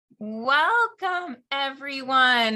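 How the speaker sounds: welcoming co-host voice. Welcoming everyone to the podcast: Chris voice impression. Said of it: "That's my best Chris voice".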